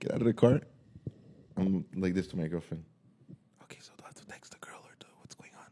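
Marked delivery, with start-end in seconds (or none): 3.6-5.6 very soft, hushed whisper. Retelling whispering to a girlfriend after getting out of the car in farmland: whispering. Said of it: "why are you whispering to me?".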